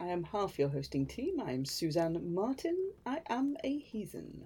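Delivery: put-on grave, solemn announcer voice with gravitas. Introducing herself as half the hosting team: put-on gravitas voice. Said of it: "I'm doing the gravitas thing".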